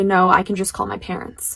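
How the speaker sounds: usual speaking voice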